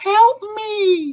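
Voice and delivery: put-on very high-pitched small child's voice. Telling a story in which she, alone in her room, hears a voice, little kid's voice. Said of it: "A little kid's voice".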